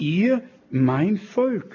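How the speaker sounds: emphasis on ihr, slowed and leaned on.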